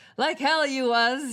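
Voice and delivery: loud, growling voice. The angry dog guy rejects your excuse about his wallet, growling. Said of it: "he growls".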